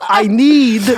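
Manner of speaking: put-on nervous New York accent voice. Repeating a practiced phrase, sounding like Woody Allen. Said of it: "I sound like Woody Allen".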